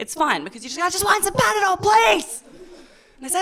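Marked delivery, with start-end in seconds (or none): 0.8-2.4 mock, very high, shrill, loud shouting. Describing buying Panadol, the speaker acts out a customer's request: imitating a shout. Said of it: "So you do this whole screaming thing".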